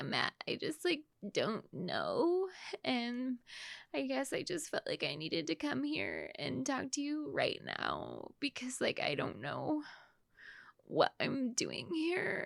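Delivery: heavy put-on creaky vocal fry through every word. Retelling how a woman came in to talk to a man, put-on heavy vocal fry. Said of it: "she's got the vocal fry working hard".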